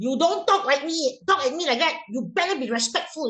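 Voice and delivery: cross parent voice. Showing teachers the wrong way to scold a child: demonstrating an angry shout. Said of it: "can you imagine you shout".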